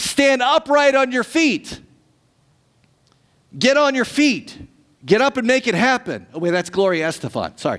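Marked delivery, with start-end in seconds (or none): 0.0-6.3 put-on, loud, commanding yell in a big voice. Preaching, retelling Paul telling a man to stand up, retelling Paul's loud yell. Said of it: "Paul yells in a loud voice".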